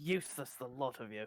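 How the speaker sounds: snarling voice. Game master's character snarls at his frightened guards. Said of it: "he snarls at the guards".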